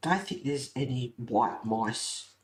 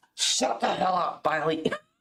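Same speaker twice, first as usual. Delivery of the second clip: acted, firm, stern, loud raised voice; 5 semitones higher, 3 dB louder than usual. Speaker retells yelling at bailey, who was going off his nut: retelling a stern, loudish order. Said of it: "in quite a stern, loudish voice".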